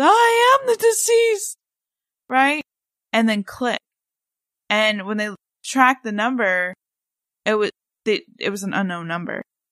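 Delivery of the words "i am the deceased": put-on very high, stretched-out, shrill shriek. Retelling a caller's emergency call, imitating a scream. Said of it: "And he screams".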